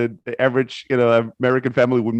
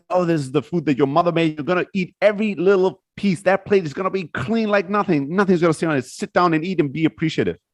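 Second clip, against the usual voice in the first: mock strict, high-pitched, scolding father voice; 5 semitones higher than usual. Retelling a book scene where the father screams at his son: imitating the father screaming. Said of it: "And then the father screams".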